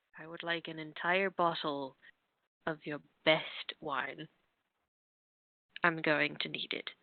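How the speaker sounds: very deadpan, dead level, soft monotone. Your character walks over to the tavern owner and orders, very deadpan. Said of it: "very, very, very deadpan".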